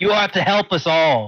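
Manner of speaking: very commanding, authoritative leader's tone. Addressing the cult followers as their leader: very commanding tone. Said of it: "in a very commanding tone".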